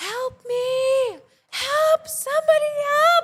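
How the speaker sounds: very loud, high, slow, drawn-out pleading screams. Retelling waking up hurt on the floor alone, retelling screaming for help. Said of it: "and I'm screaming".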